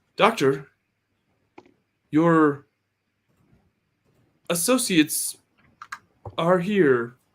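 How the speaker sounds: loud robotic assistant voice. Voicing the robot assistant greeting the doctor: robot assistant voice. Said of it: "the assistant, uh, kind of motors over to Doc Joy and says".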